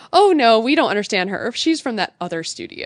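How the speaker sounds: ordinary talk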